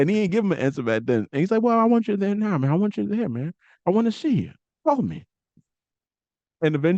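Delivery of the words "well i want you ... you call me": gentle, unassuming, mild-mannered, pitched-up delivery. Retelling how Terry Funk pleaded with a wrestler: imitating Terry Funk's soft-spoken voice. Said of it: "this soft-spoken voice".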